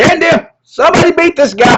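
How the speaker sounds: high, loud, frantic screaming.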